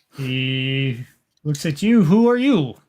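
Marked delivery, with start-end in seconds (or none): 2.0-2.7 put-on near-German accent, pitched up. Voicing a suited gentleman questioning a player: not quite a german accent. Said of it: "not quite a German accent".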